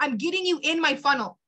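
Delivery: ordinary talk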